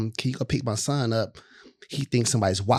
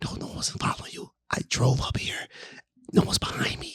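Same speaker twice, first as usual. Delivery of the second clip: whispering, quieter; 4 dB quieter than usual. Retelling calming a scared friend in a car: retelling own past whisper. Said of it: "So I'm whispering in the car the whole time".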